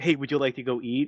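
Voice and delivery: mock bashful, shy, blurted delivery. Retelling an anime scene where a girl asks a boy out: imitating a shy blurted question. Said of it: "kinda, like, shy and".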